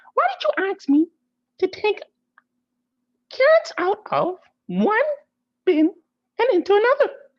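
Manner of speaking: tiny voice swooping up high. Narrating a story, voicing the trash can character: Baby Can voice. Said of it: "Baby Can voice?".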